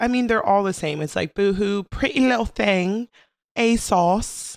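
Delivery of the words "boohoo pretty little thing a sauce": put-on, fake British accent. Joking about Halloween stories, the speaker tries the words in a fake British accent. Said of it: "I'm just trying to say it like I'm British".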